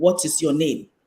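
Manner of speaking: put-on low, deep voice. Speaker retells his father asking him his name, imitating a deep voice. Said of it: "And he used a deep voice".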